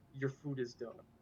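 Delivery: mock quiet, severe, very stern hushed tone. Retelling a story, quoting the manager's line: very stern voice. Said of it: "in a very stern voice".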